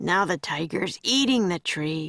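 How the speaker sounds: ordinary delivery, nothing marked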